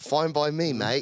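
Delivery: put-on Australian accent on "mate". Replying to a joke that the special might only be funny in australian: australian accent. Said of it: "your special might only be funny in Australian".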